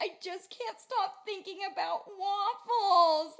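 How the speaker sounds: put-on little girl crying, very high and loud wail. Retelling a video of a little girl answering her mom: imitating a crying girl. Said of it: "the little girl that's crying".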